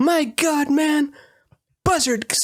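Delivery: high-pitched whistly voice. Imitating the Daniel Day-Lewis Lincoln, high-pitched whistly voice. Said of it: "the Daniel Day-Lewis one is like".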